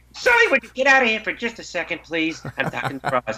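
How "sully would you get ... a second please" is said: lively animated cartoon voice, pitched up, swooping and bouncing. Showing a voice-acting role, talking to Sully: Mike Wazowski voice. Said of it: "I get to play Mike Wazowski".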